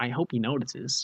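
put-on small American kid voice. Imagining a small american kid posting in the comments: imitating a small american kid. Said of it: "this small American kid going".

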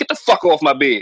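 put-on stern, severe tone. Retelling what they told the thing on the bed: imitating a stern command. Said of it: "you gotta be stern with that".

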